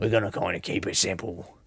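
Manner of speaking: clumsy, soft fake Australian accent. Podcast host doing a character for his australian fans, bad australian accent. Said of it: "by doing a bad impression".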